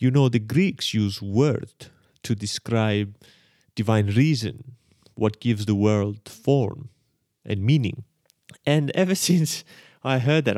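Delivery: slow put-on Israeli accent drifting toward vampire-like voice. Speaker quotes what a man says about the Greek word, Count Dracula-like accent. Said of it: "I sort of sound like Count Dracula".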